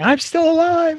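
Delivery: put-on very high shout at full volume. Retelling what another player just said: imitating someone shouting.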